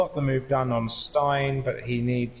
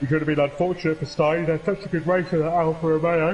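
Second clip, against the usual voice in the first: talking through a yawn; 3 semitones higher, 3 dB louder than usual. Commentating on a race, the speaker describes a near miss while yawning while speaking. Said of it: "Sorry, I'm yawning".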